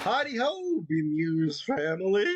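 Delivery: cracking voice. Greeting the audience at the start: cracky voice. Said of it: "my voice is all cracky like that".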